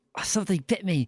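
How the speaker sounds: through clenched teeth. Narrator speaking as a woman just bitten by a snake, through clenched teeth. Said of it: "She says through clenched teeth".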